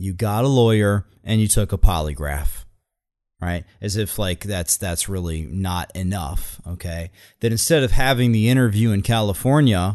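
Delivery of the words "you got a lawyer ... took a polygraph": usual speaking voice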